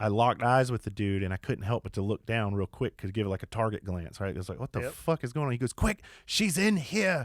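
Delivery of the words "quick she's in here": put-on very high, slow, disgruntled South African accent. Retelling what a man said when they locked eyes, in a south african accent. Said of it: "he's got a South African accent".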